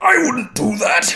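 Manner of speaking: very high, very loud full-force shout. Describing a video of someone reacting as Vegeta, doing a Vegeta impression. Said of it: "He's got a pretty good Vegeta impression".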